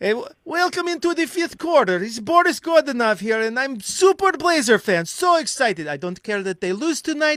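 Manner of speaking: very high, loud, hyped-up character voice. Recreating the Blazers-fan character he once played, in a Boris Godunov character voice. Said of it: "it was a little something like this".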